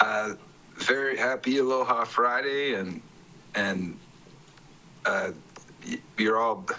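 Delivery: stuttering, stumbling start, tripping over words. A testifier greets the chair at a public hearing, stuttering. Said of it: "sorry, I'm stuttering".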